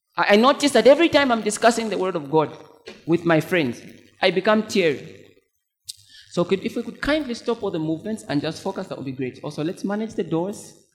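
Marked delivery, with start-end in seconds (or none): 9.5-10.8 soft, sweetly polite, very nice tone. Speaking to the congregation and ushers at church, say it in a very nice voice. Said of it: "I say with a very nice voice".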